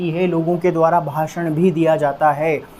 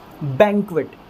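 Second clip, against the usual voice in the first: banquet stressed on first syllable ban. Teaching how to pronounce banquet as a noun, stress on first syllable ban. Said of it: "stress यहाँ पर कहाँ देना है अपने को? ब की साउंड के ऊपर।".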